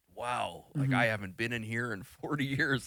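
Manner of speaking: mock emotional voice, catching and choked up. Retelling a man looking around in a headset: imitating someone choking up. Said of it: "You could just hear it in his voice".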